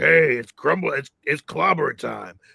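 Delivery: low, rough, gravelly cartoon rasp. Describing the cartoon voice expected in a commercial, real gravelly cartoon voice. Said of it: "I was expecting the real graggly voice, like".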